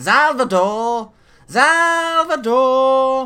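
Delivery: high-pitched whiny voice. Narrator voicing an approaching character calling out, high-pitched whiny voice. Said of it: "you hear a high pitched, whiny tone".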